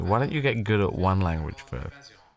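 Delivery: normal talking voice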